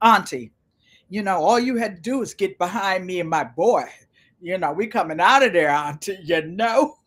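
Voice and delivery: imitated deep voice. Retelling what someone said to the speaker on the sidewalk, imitating a deep voice. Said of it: "Uncle Roscoe has a deep voice".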